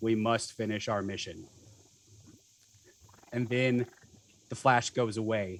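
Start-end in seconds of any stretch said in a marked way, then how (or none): 0.0-1.5 low, flat robotic monotone, no inflection. Voicing one of three figures whose faces go blank, monotonic robotic voice. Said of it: "in a very kind of monotonic, robotic voice".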